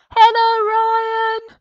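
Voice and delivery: very loud, high shout with a drawn-out word. Greeting a viewer far away in australia: shouting a greeting. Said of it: "I need to shout for this one".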